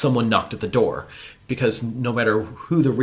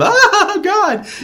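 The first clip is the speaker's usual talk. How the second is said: mock scream, higher and louder; 7 dB louder than usual. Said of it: "That's how they scream".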